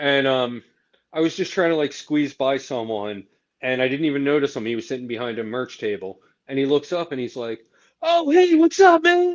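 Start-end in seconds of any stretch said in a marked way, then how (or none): 8.0-9.4 very high, very loud, overjoyed, super excited. Retelling how a man at a merch table greeted him, imitating a super excited greeting. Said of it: "Like super excited".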